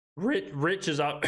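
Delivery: worn-out voice, cracking mid-word. Host updating his list after a long reaction video, voice cracking. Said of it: "A little bit of a voice crack there".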